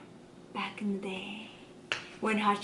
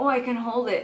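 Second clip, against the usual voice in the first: usual speaking voice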